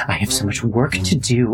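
muttering quietly under the breath. Narrator voicing a character who starts muttering under her breath. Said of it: "she just starts muttering under her breath".

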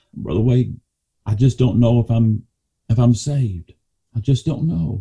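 pleading while in tears, crying. Retelling what a young lady said after the message, imitating someone crying. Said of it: "And she's crying".

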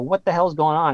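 ordinary talk

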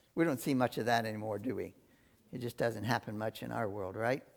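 low, soft, sarcastic tone spoken aside.

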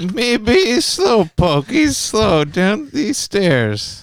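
high, very slow, sleepy cartoon drawl. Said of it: "Try two words of sleepy Mexican".

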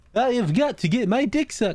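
high-pitched synthetic computer voice, robotic text-to-speech. Retelling a bit from a video, robotic text-to-speech voice. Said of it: "goes directly into fucking text to speech".

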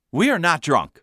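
plain

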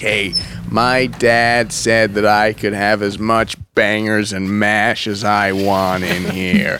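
low, slow, menacing, intimidating voice. Acting out a customer going right up to cafe staff: imitating an intimidating customer. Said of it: "really intimidating to cafe staff".

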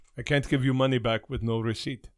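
put-on Middle Eastern-accented voice. Retelling a refund dispute at a counter, voicing the other side in a Middle Eastern accent. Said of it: "That's my Middle Eastern accent".

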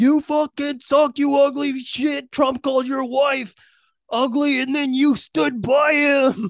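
enraged, furious, high-pitched screaming. Describing a video from the game of someone screaming at a man: retelling a scream. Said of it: "he got video of him screaming at him like".

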